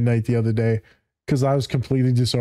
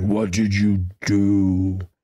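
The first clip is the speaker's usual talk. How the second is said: mock mean, harsh, very slow, drawn-out voice; 4 semitones lower than usual. Retelling how the daughter heard her dad's question: imitating a mean, harsh tone. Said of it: "you interpreted it horrifically".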